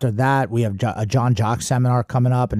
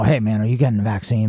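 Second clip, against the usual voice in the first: plain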